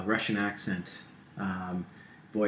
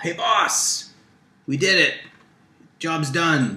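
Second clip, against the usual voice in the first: very loud, high, pleased-with-themselves henchman-style yell; 8 semitones higher, 9 dB louder than usual. Voicing pleased characters calling to their boss: yelling henchmen. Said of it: "and they yell".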